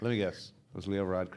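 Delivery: normal talking voice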